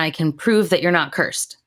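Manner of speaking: put-on exasperated character voice. Retelling a show scene where a character insists: imitating exasperated character. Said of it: "She's exasperated".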